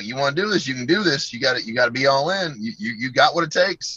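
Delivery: put-on Southern accent. Retelling when his head coach called him into his office, in Coach Darnell's Southern accent. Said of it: "he's got like a Southern accent".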